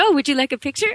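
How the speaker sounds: put-on French accent. Retelling a man's reply to her question about the police: french accent. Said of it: "he's asking me in this French accent".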